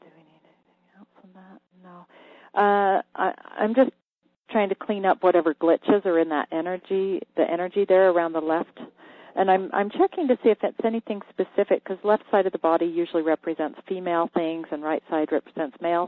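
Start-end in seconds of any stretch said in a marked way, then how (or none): 0.0-1.6 soft, hushed whisper under the breath. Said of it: "if I'm whispering here".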